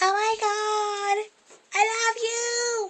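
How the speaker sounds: very high squeaky helium voice, stretched words. Speaker joking about playing with helium speaks in a squeaky helium voice. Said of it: "making my voice all squeaky".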